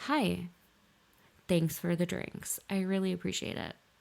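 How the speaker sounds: mock deadpan, blank, flat monotone. Retelling how a stranger buying drinks was thanked: imitating own blank flat tone. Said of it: "blank, flat, nothing else".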